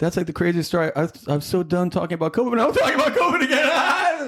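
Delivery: put-on high, laughing titter through the words. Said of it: "Tucker Carlson has that".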